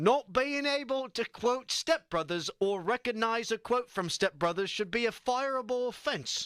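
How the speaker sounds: put-on British accent. Reading a text aloud to the others in a British accent. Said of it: "in my best British accent".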